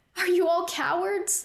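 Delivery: high, insistent, challenging and demanding delivery. A man whose sister was taken confronts the soldiers on the roof, demanding. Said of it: "demanded of the soldiers on the roof".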